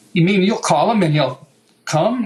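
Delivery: ordinary talk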